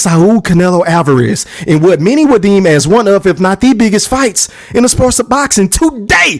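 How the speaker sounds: plain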